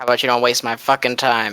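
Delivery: muttered to oneself as an aside. Answering a law officer in character, muttered under the breath. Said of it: "And then under my breath".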